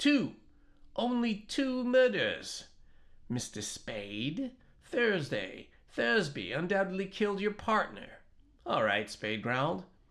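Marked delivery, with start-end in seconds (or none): 0.0-8.1 brittle, excited, very high-pitched voice. A narrator reading a character interrupting another man: brittle, excited voice. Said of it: "speaking in a brittle, excited voice".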